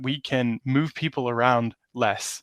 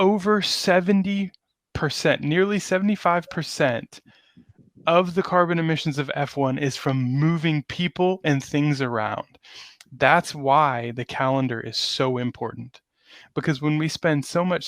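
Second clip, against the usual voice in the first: fired-up, impassioned, heated delivery; 3 semitones higher than usual. A speaker explaining emissions in motor racing, getting really passionate. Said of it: "I'm getting really passionate right now".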